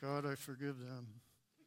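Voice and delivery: forced through clenched teeth. Speaker shows how forgiving sometimes sounds, saying it through gritted teeth. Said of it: "sometimes that's through gritted teeth".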